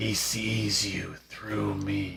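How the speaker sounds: rasping, staccato, broken-up whisper, very slow. Voicing a possessed patient in a game scene: raspy staccato whisper. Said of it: "She speaks in a raspy staccato whisper".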